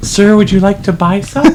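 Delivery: put-on, high little-girl voice. Voicing a small girl with a wagon of Girl Scout cookies: playing a little girl selling cookies. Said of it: "She looks at you and goes".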